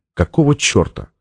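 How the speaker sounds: ordinary delivery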